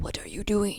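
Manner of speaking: fake exaggerated Japanese accent. Imitating English dub voice actors: stereotypical put-on Japanese accent. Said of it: "very stereotypical".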